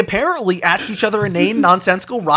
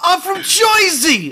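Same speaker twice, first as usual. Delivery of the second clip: very high-pitched, loud, full-voiced; 10 semitones higher than usual. Imitating people from New Jersey: imitating a loud proclamation. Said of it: "very vocally and loudly".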